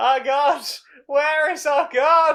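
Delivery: open, loud, high crying out. Voicing characters surrounded by people asking if they're okay: crying out. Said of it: "they cry out".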